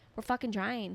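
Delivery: ordinary delivery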